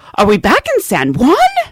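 loud, bewildered, baffled tone. Retelling what a lady on the flight asked after landing, mock loud and puzzled. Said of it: "said in this loud, puzzled voice".

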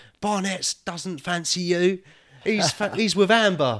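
imitated shouting. Retelling watching a dating show and yelling at the screen: retelling shouting at the screen. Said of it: "I was shouting at the screen".

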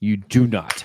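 put-on stern voice. Retelling a father's reply about a favorite team logo: imitating a stern father. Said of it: "with a sternness that only a disappointed father could muster up".

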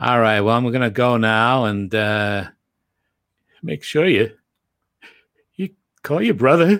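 emotional, choked-up voice. Imitating Granddad ending a phone call: imitating Granddad on the phone. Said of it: "and then at the end he would go".

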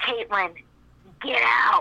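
very dark, menacing, ominous, threatening voice. Retelling a voice someone heard calling her name, in a mock-menacing dark voice. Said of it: "in like a very dark and menacing voice".

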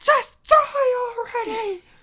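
very high, shrill, loud, fed-up screaming. Retelling a Seinfeld scene where Elaine yells at the screen: imitating Elaine screaming. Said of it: "she just screams at the screen".

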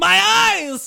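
very high, shrill, overdramatic vampire-style hiss. Reacting in character to the rising sun: dramatic, hissing at the sun. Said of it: "you're so dramatic".

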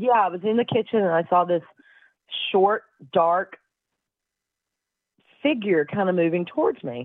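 plain

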